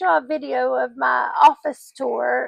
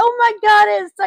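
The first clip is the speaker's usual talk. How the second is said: put-on excited yell, higher, louder; 8 semitones higher, 6 dB louder than usual. Telling a funny story, she reenacts what she shouted back then, retelling a loud yell. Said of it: "Like I yelled it really loud".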